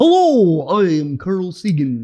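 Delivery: very slow, stretched-out, swooping delivery. Joking about sounding like Carl Sagan: Carl Sagan impression. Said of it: "Can you imagine sounding like that?".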